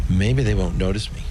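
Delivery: ordinary talk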